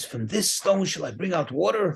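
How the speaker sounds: put-on heated, angry scolding, temper lost. Retelling how Moses lost his cool with the people: imitating an angry rebuke. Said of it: "the moment he became angry".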